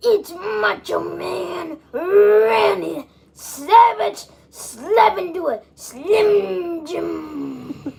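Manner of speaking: wild, frenzied, very high-pitched voice. Showing the people an imitation on request: Macho Man Randy Savage impression. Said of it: "Show the people how you be coming".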